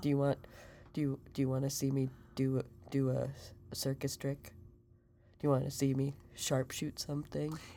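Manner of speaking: put-on low-energy voice. Following the other speaker's coaching, perform Mengen: quiet low Mengen voice. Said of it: "And you gotta go kind of quiet".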